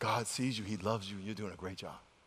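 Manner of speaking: very soft, low, barely-there murmur. Recounting leaning over to a woman trying to compose herself, retelling speaking real quiet. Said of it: "I leaned over like real quiet and said".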